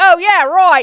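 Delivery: put-on Australian accent. Retelling a stranger agreeing to take a picture: imitating an Australian accent. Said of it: "he's Australian".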